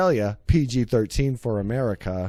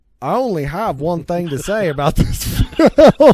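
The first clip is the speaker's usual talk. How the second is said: put-on Australian accent, raised voice; 5 semitones higher, 7 dB louder than usual. Reading a movie review aloud, trying a put-on Australian accent. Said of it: "Should I try to read this with an Australian accent?".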